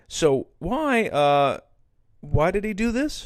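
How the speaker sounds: hesitant, stumbling, slow, pausing, pitch rising. A teacher demonstrates pausing between ideas, hesitant with pauses. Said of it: "Notice how I used a pause".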